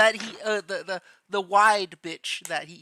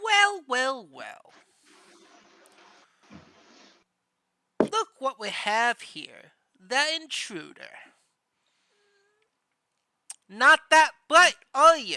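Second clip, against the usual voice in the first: taunting, high, swooping goblin character voice; 6 semitones higher, 4 dB louder than usual. Voicing the goblin that speaks to the intruder, goblin voice. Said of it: "And the one speaking is the goblin".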